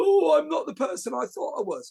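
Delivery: mock tearful crying voice, pitched way up, sobbing. Acting out new cops lying in bed crying, in mock crying. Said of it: "crying their eyes out".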